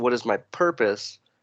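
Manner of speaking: usual speaking voice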